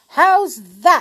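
very loud, very high, exultant, triumphant cry. After sliding down the meadow bank on a tray, he calls back up: triumphant. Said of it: "he said triumphantly".

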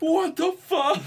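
very high, loud, shrieking scream. Retelling how a guy reacted after a prank: imitating a guy screaming. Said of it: "starts screaming".

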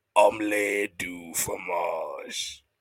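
deep voice pitched very low. Imagining a Dexter's Laboratory line in Undertaker's voice, Undertaker voice. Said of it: "think about this shit in Undertaker's voice".

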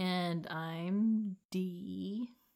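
slow, mysterious delivery. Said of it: "Mm, mysterious".

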